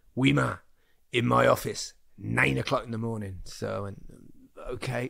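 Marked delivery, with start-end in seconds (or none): 0.2-3.4 mock, put-on barking delivery. Retelling what a man said in the dressing room after the game, imitating a barked order. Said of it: "he barked it far louder than I did".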